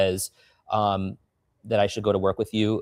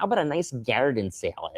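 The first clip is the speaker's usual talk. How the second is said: put-on Buffalo, New York accent; 2 semitones higher, 4 dB quieter than usual. Retelling a phone call, imitating Russell's Buffalo accent. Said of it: "he's got such a Buffalo accent".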